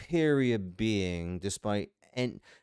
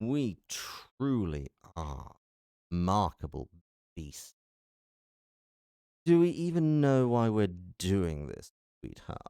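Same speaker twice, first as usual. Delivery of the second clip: slightly cocky, smug, swaggering demon voice. Voice actor trying the line again, slightly cocky demonic voice. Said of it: "the slightly cocky demonic voice".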